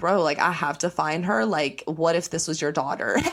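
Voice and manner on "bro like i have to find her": plain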